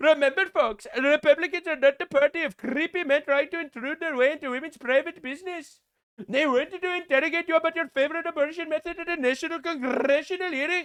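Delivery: put-on Canadian accent. Speaker quotes a congressman addressing folks, Shri Thanedar in mock Canadian accent. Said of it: "I need to use a Canadian accent".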